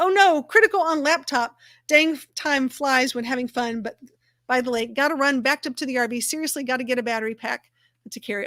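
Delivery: normal talking voice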